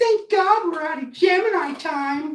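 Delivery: mocking, high, loud put-on voice.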